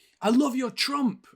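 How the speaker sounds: acted high, loud calling out. Recounting calling out to a man on his lawn, retelling a shout. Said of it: "and I shouted".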